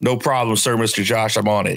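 plain

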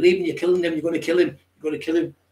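mock, loud shouting. Retelling a street fight where you shouted at the attacker, re-enacting own shouting. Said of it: "That was the word I was shouting".

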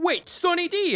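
mock, very high, overjoyed, thrilled commercial announcer cry. Retelling a Sunny D commercial scene: imitating an excited ad actor. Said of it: "they'd be like".

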